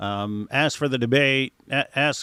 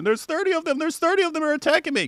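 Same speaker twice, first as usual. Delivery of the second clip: very high-pitched scream, acted out. Retelling how a guy ran back screaming; retelling a scream. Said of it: "he runs back and he's screaming".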